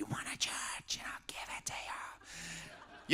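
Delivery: put-on harsh devil voice, whispered, very slow. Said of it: "will speak like".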